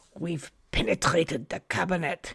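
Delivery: put-on German accent. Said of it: "in that horrible German accent".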